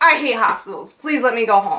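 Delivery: ordinary talk, nothing marked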